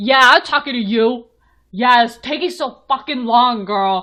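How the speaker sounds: man hollering rudely, very loud. Retelling how a man yelled at a lady: imitating a man yelling.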